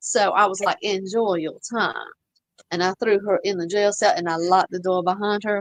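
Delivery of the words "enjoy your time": put-on Savannah Southern accent, slower. Retelling his movie line while locking a woman in a cell, thick Savannah Southern accent. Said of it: "that was exactly how she wanted me to say that".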